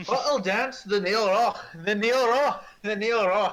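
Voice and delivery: slow, high Scottish accent, words drawn out. After announcing the end of the world is here, speaking in a Scottish accent. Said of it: "with a Scottish accent".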